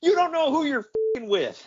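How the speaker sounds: very high, shrill, shrieking shout. Retell how the show ends, imitating Pillman shouting. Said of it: "ends the show by shouting".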